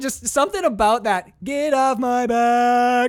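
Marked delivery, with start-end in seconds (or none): 1.4-3.1 barbershop-style held note, higher and louder. Quoting the movie line again like a barbershop quartet note. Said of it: "like a barbershop quartet fucking note".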